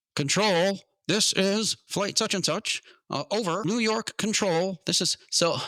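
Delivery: put-on very high, stiff, slow, formal old-movie radio voice. Retelling how a man kept talking on the radio, in stiff, formal old-movie radio talk. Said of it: "the way they used to talk in those old movies was very formal and stiff".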